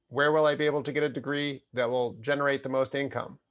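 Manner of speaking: robotic, machine-like voice. Quoting some students and parents, the speaker talks like a robot. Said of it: "I'm talking like a robot".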